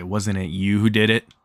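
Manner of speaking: ordinary talk, nothing marked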